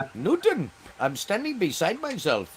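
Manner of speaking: put-on slow, sing-song, lilting Indian accent. Quoting a line from the movie Short Circuit: Short Circuit Indian accent. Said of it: "the Indian accent from that movie".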